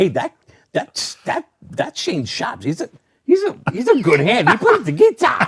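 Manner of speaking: very high, sing-song, halting put-on voice. Doing an impersonation of a tag team partner after being asked: Scott Ashworth impression. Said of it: "can you do an impersonation of Ash?".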